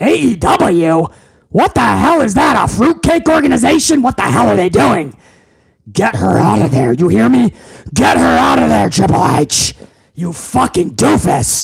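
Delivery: furious, full-fury angry rant. In a skit, the boss reacts to bad news from Triple H, in a Vince McMahon impression. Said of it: "doing the Vince voice".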